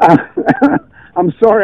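fast, loud, laughing delivery. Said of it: "I'm laughing because".

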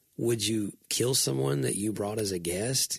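plain

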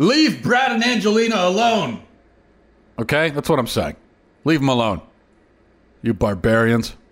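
mocking, sarcastic, swooping sing-song tone. Speaking to an audience right after a sensitive guy moment, sarcastic. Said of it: "And now I'm being sarcastic again".

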